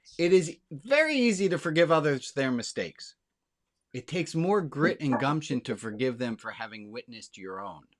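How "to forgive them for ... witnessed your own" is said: ordinary talk, nothing marked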